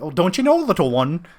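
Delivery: bad, butchered put-on Irish accent. Answering a viewer who complained about a butchered accent: attempted Irish accent. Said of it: "You know I can't do an Irish accent".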